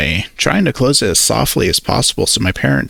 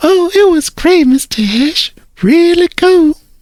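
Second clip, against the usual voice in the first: weird fake-sweet, very high, overly polite put-on voice; 5 dB louder than usual. Reading a story where a girl answers a friend's father: weird sweet voice put on for parents. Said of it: "that weird, sweet voice that sh-, she puts on for my parents".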